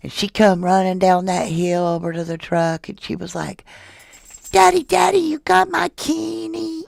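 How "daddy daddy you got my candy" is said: very high, creaky, put-on baby voice. Retelling how a child ran to the truck asking for candy, in baby voice. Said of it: "saying this in baby voice".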